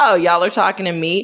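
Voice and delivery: cheeky, sassy, knowing delivery. Retelling a scene where the character answers the man: imitating a sassy character. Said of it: "So she's super sassy".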